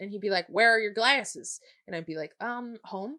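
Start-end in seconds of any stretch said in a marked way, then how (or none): 0.5-1.6 put-on heavy Southern accent, higher-pitched and louder. Retelling a teacher questioning a student in class, heavy southern accent. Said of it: "He had a really s- heavy Southern accent too".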